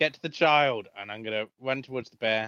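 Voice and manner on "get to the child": loud shouting. Voicing a character urging an ally to reach a child: shouting an order. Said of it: "I'm gonna shout at Kado and go".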